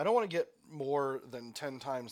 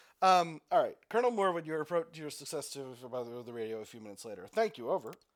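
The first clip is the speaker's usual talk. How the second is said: ordinary talk, nothing marked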